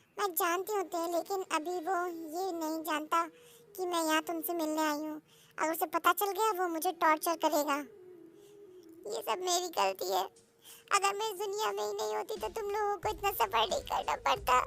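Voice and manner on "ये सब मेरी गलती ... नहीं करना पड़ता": sobbing, tearful, crying through the words. Blaming oneself for the others' long journey, crying while talking. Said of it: "रो मत".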